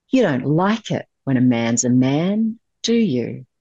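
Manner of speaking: mock-menacing hushed voice, quietly threatening man. Retelling what a man holding a knife said, retelling a quiet, threatening voice. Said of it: "this voice just really like in this threatening".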